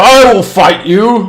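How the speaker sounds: loud, slow, booming, challenging voice. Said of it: "the captain says".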